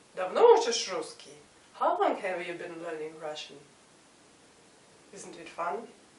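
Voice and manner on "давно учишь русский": Давно учишь русский, rising intonation on русский. Russian lesson, the same words asked to form a question: question intonation. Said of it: "asked with an interrogative intonation, form a question".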